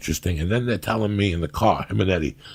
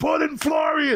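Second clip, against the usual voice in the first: mock, very high, drunken heckling shout. Recalling watching the listener's boring fight, retelling a yell. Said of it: "I start yelling".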